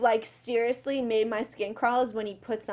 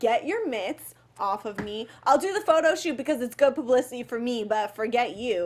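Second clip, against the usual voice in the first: ordinary talk, nothing marked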